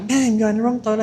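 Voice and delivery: shouted, pitched high. Retelling how a cleaner came into the toilet: retelling a shout. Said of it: "He came in shouting".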